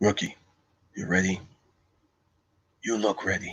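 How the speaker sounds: hushed, very quiet, softly murmured lawman voice. Trying out movie impressions, the speaker does a Judge Dredd voice. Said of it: "I can do my Dread voice".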